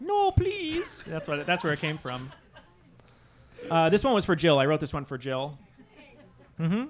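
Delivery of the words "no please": put-on high-pitched German accent. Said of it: "The Dutch boy with the German accent".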